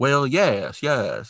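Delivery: put-on Southern gentleman accent. Describing a TV deputy's way of speaking: Deputy Sample's Southern gentleman accent. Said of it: "this Southern gentleman accent".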